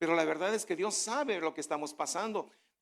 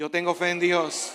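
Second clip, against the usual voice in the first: said very loudly, louder; 8 dB louder than usual. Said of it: "dígalo bien fuerte".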